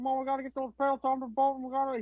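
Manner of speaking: put-on hard-to-understand mumble. Imitating how an actor talks in The Revenant: Tom Hardy mumbling impression. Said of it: "'Cause he talks like this".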